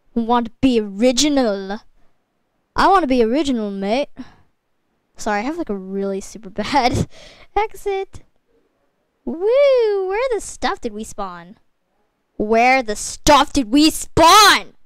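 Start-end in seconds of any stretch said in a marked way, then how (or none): 10.1-14.6 loud, swooping holler, bouncing all over the place. Playing a game with others, a loud shout. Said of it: "Sorry, that was kind of loud".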